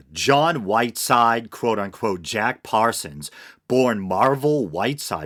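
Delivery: ordinary delivery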